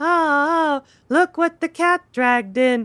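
slow, high, lifeless delivery, drawn-out "ah". Quoting a line from the movie: imitating Tippi Hedren's lifeless delivery. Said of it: "with just no life in her voice".

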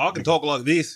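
very loud, high-pitched, belted South African accent. While casting for South African films, showing you can do a South African accent like Trevor Noah. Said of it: "South African".

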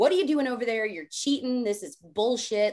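play-acted angry, accusing outcry in a cow voice. Retelling how the jealous cows yelled from the herd: imitating cows screaming angrily. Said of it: "they were screaming, like".

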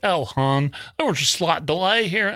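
terrible, high-pitched put-on Southern accent. Retelling a phone call, the speaker quotes a lady who answered in a bad Southern accent. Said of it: "comes on Southern accent".

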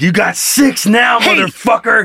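slow, drawn-out, menacing mock gangster voice. Joking about forcing a guest at gunpoint: mock threatening. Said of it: "we put a gun to his head and we're like".

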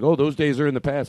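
usual speaking voice

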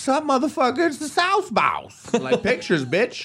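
high, slow, cocky hype-man voice.

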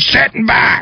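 put-on very high, barked, snapped-out yell. Retelling what an automated bus driver figure does: imitating a bus driver yelling. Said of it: "he yells at you".

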